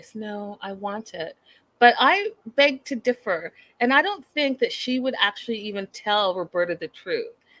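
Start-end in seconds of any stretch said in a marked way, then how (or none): 0.1-1.4 gentle, soft-spoken voice, very slow. Quoting what one woman told another, in a soft voice. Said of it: "in that soft voice".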